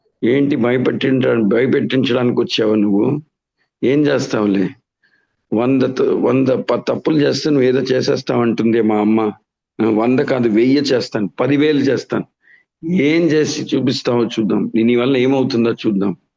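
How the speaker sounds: ordinary talk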